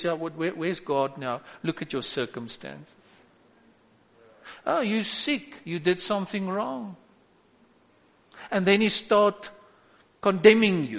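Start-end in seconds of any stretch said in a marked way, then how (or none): 0.0-7.0 very quiet, hushed, taunting whisper. Acting out the devil whispering lies to a believer: imitating the devil whispering. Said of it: "the devil whispers in your ear and says".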